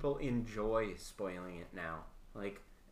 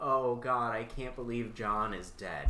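ordinary delivery

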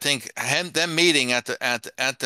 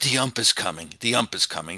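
put-on whisper, pitched lower; 3 semitones lower than usual. Joking about Lindor's job on the mound, imitating Lindor whispering. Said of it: "and he whispers".

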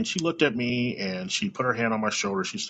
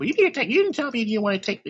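mock agitated, nagging voice, much higher pitched; 10 semitones higher, 4 dB louder than usual. Describing how a mother nags her child, imitating an agitated, nagging mom. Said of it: "Mom, calm down".

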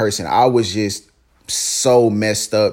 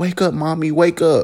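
put-on acted, high crying little girl voice, pleading; 7 semitones higher than usual. Retelling hearing a younger sister at their mom's side: imitating sister crying. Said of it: "I hear my younger sister crying".

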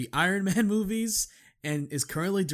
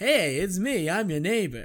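sleazy, oozing fake-nice friendly voice; 3 semitones higher, 3 dB louder than usual. Describing a movie's scummy wannabe-nice neighbor: Phil Hartman fake-nice neighbor voice. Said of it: "He talks like that".

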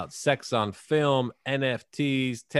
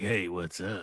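soft, sultry, sexy and seductive voice; 5 semitones lower, 7 dB quieter than usual. Recalling how Hugh came on the episode and greeted everyone, imitating Hugh's sexy voice. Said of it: "with your sexy voice".

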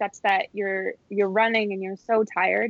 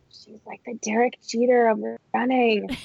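mock whispering; 2 semitones higher than usual. Retelling a remark made while watching someone at a gathering: retelling a whisper. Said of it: "whispering to Gabe".

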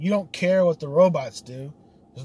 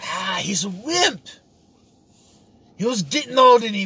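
bad, clumsy, high put-on Russian accent; 6 semitones higher, 4 dB louder than usual. Imitating a Russian reacting to a robot: wrong put-on Russian accent. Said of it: "I'm giving him the wrong accent".

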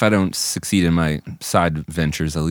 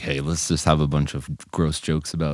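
ordinary delivery

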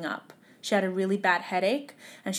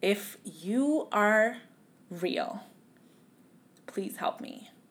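mock sobbing, tearful and bawling; 3 dB quieter than usual. Retelling praying on the bathroom floor after a doctor's bad news, re-enacting a bawling plea. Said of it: "I was just bawling".

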